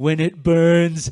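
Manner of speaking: deliberately bad, slow, loud put-on Austrian accent.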